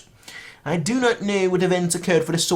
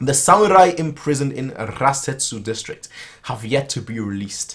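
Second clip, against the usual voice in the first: usual speaking voice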